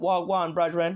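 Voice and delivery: put-on thick Jamaican accent. Describing how a man spoke before coming to america, in heavy jamaican accent. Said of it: "that heavy Jamaican accent".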